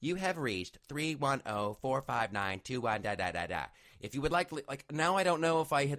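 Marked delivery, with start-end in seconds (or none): 0.0-4.5 robotic, automated computer recording voice. Complaining about voicemail greetings, imitating a computer voicemail voice. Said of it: "it's the computer voice".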